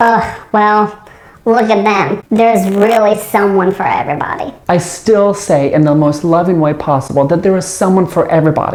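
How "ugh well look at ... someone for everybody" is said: slightly snide sarcasm with raised pitch. Showing how a well-meant phrase sounds when said the wrong way: a little sarcastic. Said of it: "that phrase can sound a little sarcastic when said the wrong way".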